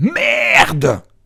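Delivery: shrill, fed-up, furious, exasperated yell. Telling a joke where the exasperated old woman yells at the deaf old man, mock exasperated yell. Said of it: "Alors excédée, la vieille, l'œil sec, hurle".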